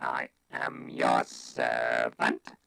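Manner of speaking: very slow, rough, mechanical robotic monotone. Showing how to say a line, delivered in Dalek voice. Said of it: "you have to do a Dalek impression".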